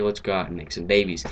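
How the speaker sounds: normal talking voice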